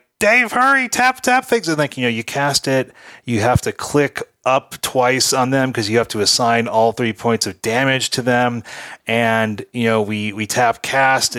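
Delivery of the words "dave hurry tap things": acted-out yell, much higher pitch. Retelling a card game, urging a partner to hurry: retelling a yell. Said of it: "I'm yelling like".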